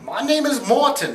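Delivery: very high, slow voice with a vague British sound. Imitating how the director says his name: Morten Tyldum impression. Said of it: "That's how he says it, 'cause he's kind of British".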